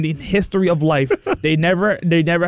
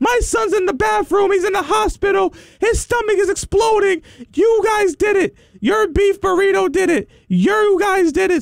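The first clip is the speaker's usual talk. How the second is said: mock very high-pitched frantic yelling rant; 14 semitones higher than usual. Retelling a customer service call from a lady about her sick son: retelling a frantic yelling customer. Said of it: "she started spazzing and yelling".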